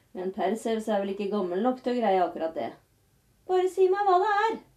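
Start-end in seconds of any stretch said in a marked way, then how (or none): 3.5-4.5 very high, loud calling out. Perseus shouts back to Polydektes: shouting. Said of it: "ropte Perseus".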